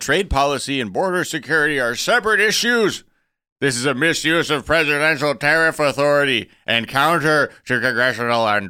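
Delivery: put-on high, loud old man voice. Quoting a senator's statement, in an old man voice as Grassley. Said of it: "you got a lot of different old man voices".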